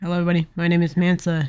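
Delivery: low, groggy, just-woken-up morning voice. Opening a video, the speaker greets everybody in a morning voice. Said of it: "Top tier morning voice".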